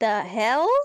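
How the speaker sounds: startled, shocked exclamation. Reacting in character to a bag opening by itself: shocked in character. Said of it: "look down at my bag in, like, shock".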